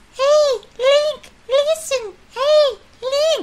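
very high, very slow, very drawn-out fairy voice. Retelling what a fairy says, put-on fairy voice. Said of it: "this fairy comes in, and she's all like".

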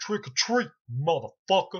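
loud, brash taunting. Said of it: "Busta motherfucker looks at him and goes".

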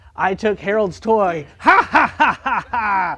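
very slow, loud, drawn-out evil cartoon-villain laughter. Speaker imitating him laughing like a cartoon villain, cartoon villain laugh. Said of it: "laughing like a villain from a cartoon".

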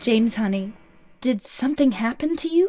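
put-on eerie, unsettling, very high voice. Recapping a game, Maria answers from her cell, voicing Maria creepily. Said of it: "she creepily responds".

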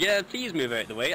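usual speaking voice

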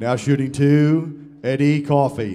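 put-on arena announcer voice. Greeting a morning audience, doing a Rupp Arena announcer voice. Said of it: "That's my Rupp Arena voice".

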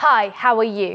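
voice strongly projected to reach the listener. In a public speaking exercise, greeting someone at the frame's edge, projecting voice. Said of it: "I want you to hit me with your voice".

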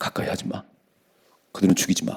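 soft, hushed whisper.

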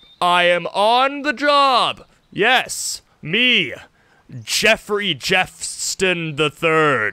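dramatic, hammy delivery with swooping, sweeping inflections. Commenting on a game, voicing its menu narrator in a dramatic voice. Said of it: "I am the dramatic voice in all of the menus".

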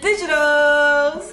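big, loud, slow, excited announcer-like delivery.

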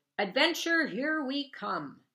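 happy, loud, high, booming bellow. A girl's dad, taking the next exit off the interstate, calls out: bellowing. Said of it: "her dad bellowed".

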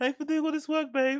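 put-on soft, high, girlish little-girl voice. Repeating a man's earlier line to the others, mock little girl voice. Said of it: "look at his little girl voice".

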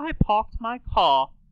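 put-on high posh British accent, no R in parked, car. Demonstrating to a listener how she drops her R's, in a Queen Elizabeth voice without R's. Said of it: "She would say".

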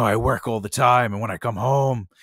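put-on dark, ominous-sounding voice. Retelling how a casting reader played the father role, imitating a dark father reading. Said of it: "read the character like a real dark father".

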